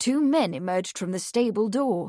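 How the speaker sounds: plain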